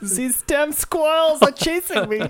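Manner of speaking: put-on very high German-accented voice. Recalling a story about a German man who called the cops: German accent. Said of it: "You have a good German accent".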